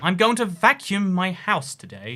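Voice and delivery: put-on British accent. Asked to say vacuum in a British accent, the speaker answers in a British accent. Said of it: "say vacuum in a British accent".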